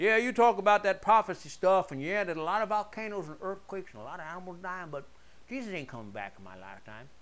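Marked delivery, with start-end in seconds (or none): 2.2-7.1 put-on toothless Southern accent, quieter. Speaker voicing someone talking about prophecy, in a southern toothless accent. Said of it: "I make this southern toothless accent".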